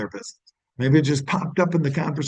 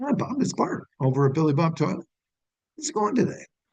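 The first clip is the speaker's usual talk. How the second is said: put-on easy, friendly, familiar tone, like old pals; 4 semitones higher than usual. Showing a cold sales call in the same tone: familiar phone tone. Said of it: "it might sound like this".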